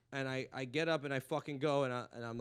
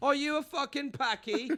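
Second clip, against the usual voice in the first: put-on very high-pitched, loud British accent; 13 semitones higher, 7 dB louder than usual. Imitating a british heckler at an online open mic: british accent. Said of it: "And then I get the British one".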